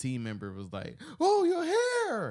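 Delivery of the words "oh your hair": very high, surprised yell, "hair" drawn out. Retelling a team member reacting to the speaker's hair at a meeting: retelling a yelled exclamation. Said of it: "but she did yell".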